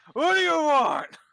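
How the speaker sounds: put-on very high, very loud, shrill, rough angry old man voice. Narrating a door slamming open to reveal a man, answering in an angry old man voice. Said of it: "you just see this angry old man".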